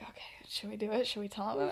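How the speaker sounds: soft, hushed, conspiratorial whispering. Retelling how the boys talked it over: imitating someone whispering. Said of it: "whispering to each other".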